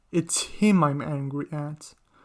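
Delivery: ordinary delivery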